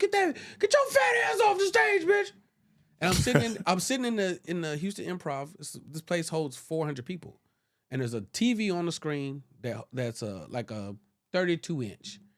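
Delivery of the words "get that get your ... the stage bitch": very high, shrill, shrieking, high-pitched scream. Telling a story about a comedian's social media videos, imitating Justin Whitehead screaming. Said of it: "He's just screaming at the T V".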